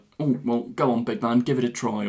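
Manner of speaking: usual speaking voice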